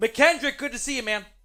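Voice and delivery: forceful, emphatic, punched-out delivery. Greeting someone during the stream, said really loud. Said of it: "I just said that really loud".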